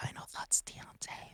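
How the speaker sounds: soft, unvoiced whisper. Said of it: "Why are you whispering?".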